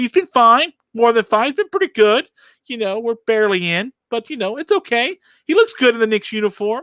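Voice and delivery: very high-pitched, defensive tone. Defending a player the knicks just picked up: high-pitched defensive voice. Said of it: "why my voice gets so high-pitched".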